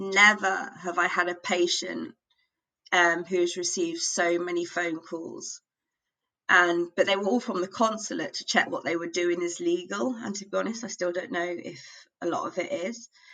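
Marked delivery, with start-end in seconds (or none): none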